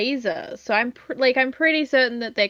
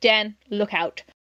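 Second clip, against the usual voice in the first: mock deadpan, flat, expressionless delivery; 3 semitones lower than usual. Describing a scene where a character walks up, retelling a deadpan line. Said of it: "deadpan. He just goes".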